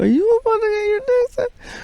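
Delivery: very high-pitched voice. Retelling a night out, imitating a voice in his head. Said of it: "it said it in that tone".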